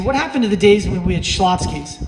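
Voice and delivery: ordinary talk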